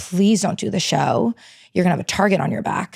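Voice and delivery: mock, tearful, crying voice. Retelling a phone call from their crying mom, imitating mom crying. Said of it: "she called me like crying".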